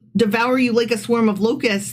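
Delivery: ordinary talk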